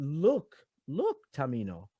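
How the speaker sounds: soft, pleading appeal.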